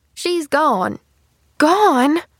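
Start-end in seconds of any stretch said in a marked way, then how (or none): 1.6-2.2 stunned, high, loud, gasping one word. Told her aunt is gone, a niece reacts: gasping. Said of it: "Gasped Pollyanna".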